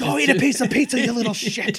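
loud, very high-pitched ranting outburst. Joking about a noisy birthday party guest: Mel Gibson rant voice. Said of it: "You sound like Mel Gibson".

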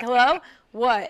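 mock fed-up, disdainful tone. Imitating Banana answering a phone call: imitating Banana's disdainful answer. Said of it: "Banana responds to him with such disdain".

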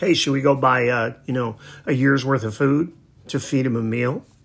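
usual speaking voice

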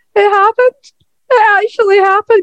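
mock overjoyed sobbing, very high, tearful. Recalling watching a reunion in the ring, acting out crying with joy. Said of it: "tears streaming down my face and like proper crying going".

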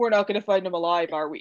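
put-on flat, expressionless delivery. Quoting a line from a promo with a straight-line emoji face, imitating Ronan's deadpan line reading. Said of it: "the two eyes and then it's the straight line".

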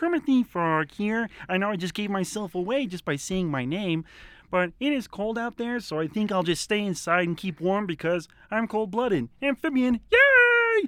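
loud squeaky voice with "yay" stretched long. Doing an impression for the others, introducing himself: Kermit the Frog voice. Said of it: "That was really good".

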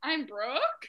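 hesitant, doubtful, unsure, questioning delivery. Host teases a new show member about how she said her name; imitating Brooke sounding unsure. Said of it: "you sounded very unsure".

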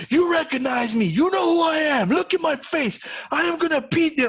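drill instructor screaming, very high-pitched. Retelling a sergeant at the dorm door at night: imitating a screaming drill instructor. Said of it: "and just screaming at you".

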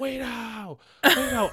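very high, shrill, acted-out scream. Recapping a movie car chase, imitating Lana screaming out the window. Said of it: "she's screaming out the window".

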